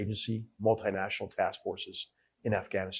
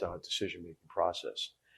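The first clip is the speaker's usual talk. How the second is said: usual speaking voice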